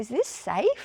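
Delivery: put-on innocent tone. Retelling being handed absinthe at a wild party: imitating own naive past self. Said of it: "I was so sort of naive".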